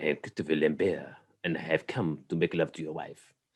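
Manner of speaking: put-on French accent. Riffing on a name, the speaker plays Christopher Lambert in a French accent. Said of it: "it sounds more classy if you say it with a French accent".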